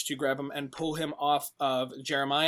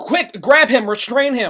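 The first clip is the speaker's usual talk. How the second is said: yelling out loud and high. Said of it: "Tex kinda yells out".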